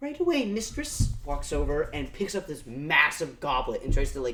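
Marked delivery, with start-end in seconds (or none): 0.0-1.1 tiny, very high little goblin voice. Narrating a scene, the storyteller voices a small goblin answering the queen. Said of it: "this small goblin going".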